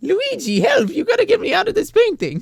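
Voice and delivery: very high, loud, sing-song cartoon-style voice. Asked to do an impression, the speaker tries Luigi but slides into a Mario impression. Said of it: "it's turning more into Mario".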